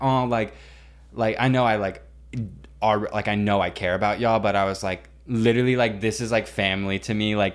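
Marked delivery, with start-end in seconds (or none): none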